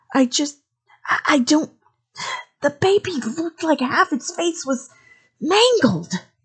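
hissed words, very high-pitched. A woman answers the man's demand, hissing at him. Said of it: "she hissed at him".

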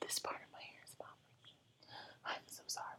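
whispered. Addressing the audience mid-recording, the speaker is whispering. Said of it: "I don't know why I'm whispering".

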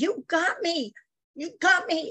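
furious, high-pitched angry screaming. Recounting a girl who screamed at them, imitating a girl's angry screaming. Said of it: "screaming at me".

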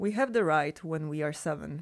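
ordinary delivery

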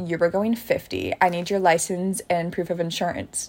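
ordinary delivery

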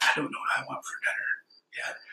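soft, secretive, hushed whisper. Telling how Allison whispers to them at a restaurant; imitating Allison whispering. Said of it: "she whispers to me".

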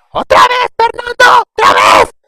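very loud, very high, shrill, swooping scolding yell. Retelling how a mother yelled at her kid Fernando, imitating a mother yelling. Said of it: "la mamá gritaba".

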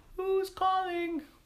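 very high, tiny, wee little voice. Reading a story aloud, an unseen voice answers the visitors' call: tiny little voice. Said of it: "in a tiny little voice".

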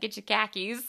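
put-on Boston accent. Retelling a joke by a guy from boston: imitating a boston accent. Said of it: "If you wanna sound like we sound".

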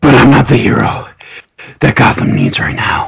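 put-on wheezy, breathless, rasping voice. Complaining about how Batman talks, deliver the line in a Batman voice. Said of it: "You sound like an emphysema".

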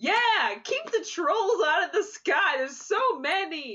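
booming high yell. Player character joining a raving madman, yelling at the sky. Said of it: "I'm just like also yelling at the sky with him".

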